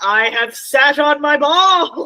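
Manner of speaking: put-on, very slow, loud, high, drawn-out bellow. Retelling how an actor at a table read yelled: imitating a yell. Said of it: "he yells".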